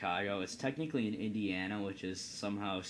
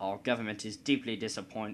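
put-on, fake British accent; 4 dB louder than usual. Speaker playing the Dutch in a trade bit, speaking in a British accent. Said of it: "I am doing a British accent for the Dutch".

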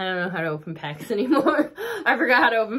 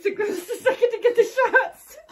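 laughing hard to tears, higher pitch; 11 semitones higher, 3 dB louder than usual. Playing a game with shots, laughing so hard you're crying. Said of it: "I'm laughing so hard I'm crying".

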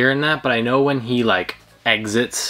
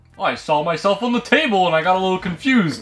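put-on character voice, pitched up high; 7 semitones higher than usual. Playing Alf, who appears beside his own cookie jar: Alf voice. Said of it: "Alf, you can't just st-, what, what are you doing?".

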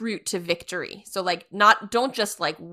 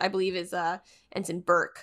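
plain

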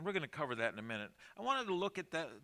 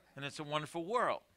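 ordinary delivery

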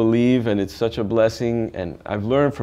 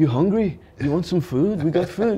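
put-on Liverpool accent, pitched up higher; 7 semitones higher than usual. Telling about meeting Paul with his band, doing a Paul impression, Liverpool accent. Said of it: "with the Liverpool accent".

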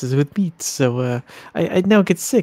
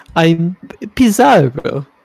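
put-on Italian accent, louder; 2 semitones higher, 6 dB louder than usual. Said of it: "do that Italian accent".

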